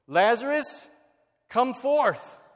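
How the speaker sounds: very loud, high, ringing commanding call. Telling the Lazarus story, the speaker acts out the call at the stone: loud call. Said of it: "he says in a loud voice".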